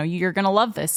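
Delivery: normal talking voice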